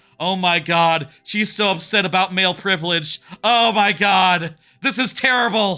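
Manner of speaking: play-acted panicky, frantic, overwrought outburst. Retelling a movie scene where the boy reacts: imitating someone freaking out. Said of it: "he's just freaking out".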